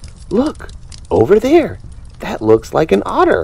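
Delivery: very high, swooping, exclaiming cry. Narrator reading a fish spotting what might be an otter: crying out. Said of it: "she cried".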